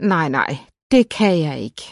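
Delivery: plain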